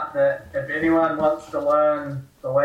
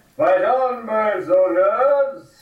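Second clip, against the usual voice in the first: booming, magically amplified, slow, rallying voice; 7 semitones higher, 3 dB louder than usual. Using a spell to rally the soldiers: magically loud voice. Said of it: "make my vi-, voice loud again and be like".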